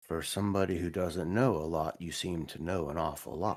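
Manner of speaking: voice brought right down. Addressing Mister Ross directly, lowered quiet voice. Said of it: "I'm going to lower my voice real quietly and say".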